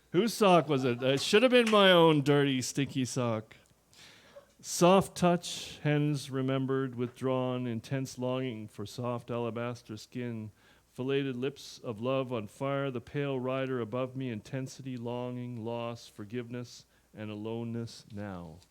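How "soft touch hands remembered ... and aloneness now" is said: plain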